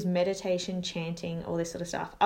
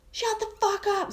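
play-acted very high, shrill, furious shout; 13 semitones higher than usual. Retelling how she yelled at a woman whose kids slept upstairs: retelling her own yell. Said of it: "So I'm yelling at her now".

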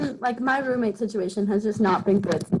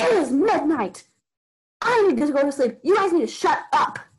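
put-on, high-pitched scream; 6 semitones higher, 4 dB louder than usual. Retelling how she came out at midnight and screamed at them: retelling a scream. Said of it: "she like screams to you".

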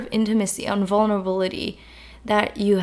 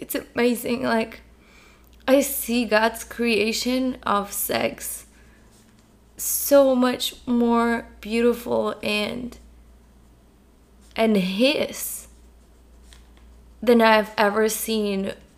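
on the verge of tears, close to crying. Sharing how life looks after healing together: on the verge of tears. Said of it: "I feel like I wanna cry".

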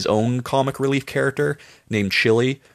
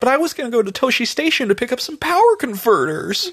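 very high voice with wide pitch swoops; 13 semitones higher than usual. Comparing a TV character to a young Luke Skywalker: Luke Skywalker impression. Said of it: "He reminds me of a young Luke Skywalker".

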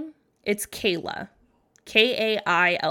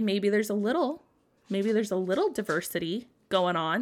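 ordinary delivery

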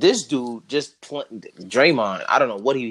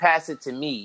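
ordinary talk, nothing marked

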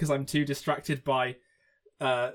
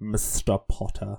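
deep, very low put-on voice; 5 semitones lower than usual. Quoting what he says, doing an Alan Rickman voice. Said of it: "I just wanted to do something with like a deep voice".

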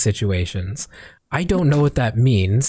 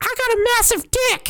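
put-on squeaky, very high-pitched kid voice. Retelling what a kid said on walking into the lobby, imitating his high voice. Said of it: "And he sounded just like that".

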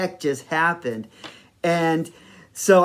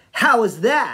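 acted-out sassy tone, pitched up; 6 semitones higher, 4 dB louder than usual. Retelling what she said after stepping back: imitating a sassy tone. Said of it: "real, real sassy".

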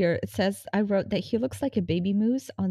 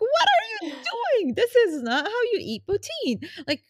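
put-on very high, swooping shriek; 13 semitones higher than usual. Retelling screaming at the TV as someone eats poutine by hand. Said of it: "I like screamed at my TV".

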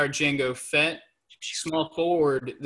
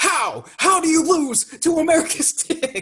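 put-on fired-up sports commentator voice, higher and louder; 13 semitones higher, 5 dB louder than usual. Imitating a sports commentator reacting to a matchup: Stephen A screaming. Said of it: "he'd be screaming right now".

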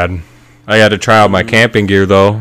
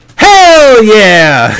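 put-on drunk cheering whoop, higher and louder; 9 dB louder than usual. Retelling a smoker greeting the guitar guy, imitating Robo cheering. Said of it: "he'd go".

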